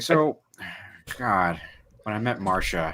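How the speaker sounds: slow storytelling voice, every word drawn out. Imagining a five dollar ticket that is a lecture: George Lucas impression. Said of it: "He's like".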